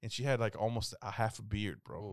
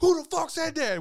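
play-acted, very high, furious, shrill shout; 7 dB louder than usual. Retelling how the pissed-off bus driver yelled at the kids: imitating an angry bus driver. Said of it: "she got pissed off".

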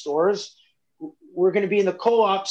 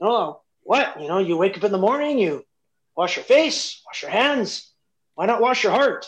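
halting, non-native English. Speaker retells a saying of their grandpa, imitating grandpa's broken english. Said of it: "in his broken English".

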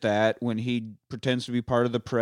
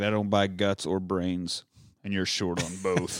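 bad Scottish accent, dropped low; 4 semitones lower, 4 dB quieter than usual. Retelling what Hannibal said in the story, bad Scottish accent as Hannibal. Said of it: "I don't know if you got to be Scottish".

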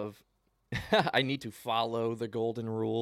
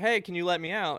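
play-acted, raised, high-pitched yell; 8 semitones higher, 4 dB louder than usual. Retelling asking a driver from a car window: retelling own yell. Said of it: "I yelled out the window".

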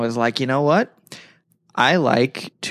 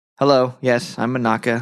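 put-on oblivious, clueless voice. Retelling the scene, imitating Monaka arriving with the delivery. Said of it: "He's just like".

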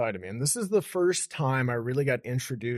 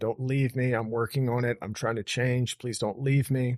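acted sobbing, tearful pleading. Retelling begging her through a locked closet door, retelling a crying plea. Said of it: "sitting on the other side of the closet door crying".

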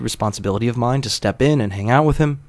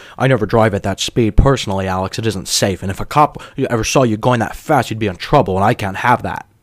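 put-on hasty, cautious tone; 3 dB louder than usual. Retelling what an acquaintance said about his car: imitating a hasty cautionary tone. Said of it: "a hasty, cautionary tone".

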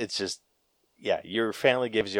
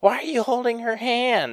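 very high-pitched yelling. Speaker retells an aunt yelling at her while getting into cars, retelling an aunt's yell. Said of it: "one of my aunts yelled like".

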